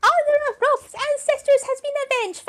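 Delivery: very high, loud, projected female voice at top octave. Performing a female version of Rolf: high female Rolf voice. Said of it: "That's actually really good".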